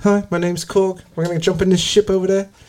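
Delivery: New Zealand accent. Chatting about doing accents, one speaker tries a kiwi accent. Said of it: "I'd rather do a fucking like Kiwi accent".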